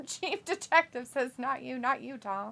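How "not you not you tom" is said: soft, near-whispered, dropped-volume voice. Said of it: "you didn't have to whisper that".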